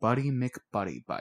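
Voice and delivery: utterly deadpan, expressionless, dead inside. Reading a story aloud, a goblin names another goblin: deadpan. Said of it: "Blunt Munch said, deadpan".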